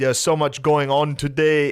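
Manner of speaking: put-on crazy French accent, high and loud. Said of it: "just this wild accent".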